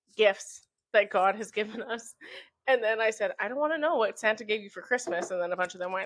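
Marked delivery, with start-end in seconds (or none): none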